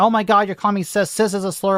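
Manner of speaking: mock panicked whining. Mocking people who object to being labeled: imitating someone freaking out. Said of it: "People keep freaking out about it".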